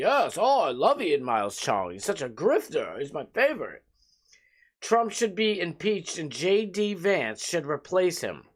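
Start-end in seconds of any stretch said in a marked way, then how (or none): 0.0-3.8 derisive, scornful put-on character voice. Mocking a public figure by acting out what he would say: mocking Elon Musk impression. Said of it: "Elon Musk is like".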